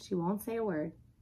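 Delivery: ordinary delivery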